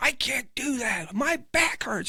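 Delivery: very high, drawn-out, freaked-out panicked yelling. Retelling a woman's refusal of a sobriety test: imitating someone yelling. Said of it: "she's freaking out, yelling".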